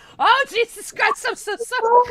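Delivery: very high squealing through laughter. Apologizing to another speaker after a mishap, laughing while talking. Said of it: "I'm laughing".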